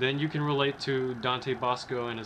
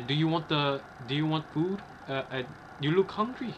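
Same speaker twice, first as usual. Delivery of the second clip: rough, bad, put-on Filipino accent; 3 semitones higher than usual. You act out a mom asking her son's guests if they want to eat, bad filipino accent. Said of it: "his mom has the Filipino accent, like she talks like this".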